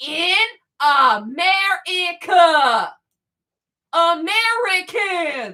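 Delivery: drawn out word by word, very slow, deliberate. Addressing listeners, the speaker repeats the point real slow. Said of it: "Let me say it real slow".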